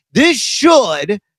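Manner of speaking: should pushed up and wide.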